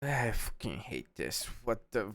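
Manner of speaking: goblin voice, muffled as if mouth covered. Voicing a goblin whose mouth is being covered during an attack: goblin speaking with mouth covered. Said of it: "He's like".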